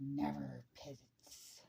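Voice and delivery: creepy, unhinged, crazed maniac whisper. Reading a story aloud, Jessica answers the others in a creepy voice. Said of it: "still in a creepy voice".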